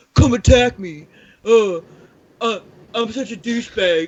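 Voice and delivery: put-on taunting voice. Asked by a friend to do more voices, doing a Zak Bagans impression. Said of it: "you could be like Zach Bagan's like".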